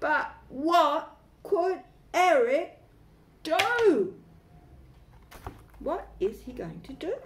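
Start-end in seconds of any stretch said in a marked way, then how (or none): 0.0-4.1 very big, feeling-filled dramatic voice, loud, slow. Reading a story aloud to a group, saying a line in a very big feeling voice. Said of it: "in a very big feeling voice".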